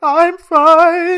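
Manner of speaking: mock very high, very loud crying sob. Retelling a movie scene where a scared girl answers the principal: imitating a crying girl. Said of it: "And she's just crying".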